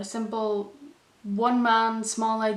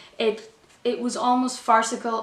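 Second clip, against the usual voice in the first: normal talking voice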